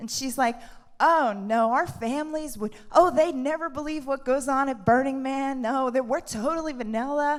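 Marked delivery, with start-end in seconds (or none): 1.0-7.4 adorable, sweet, put-on Southern accent. Retelling what a new acquaintance said about Burning Man: imitating a Southern accent. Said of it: "she's got this adorable Southern accent".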